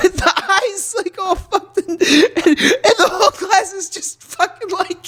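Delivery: high-pitched, laughing through the words.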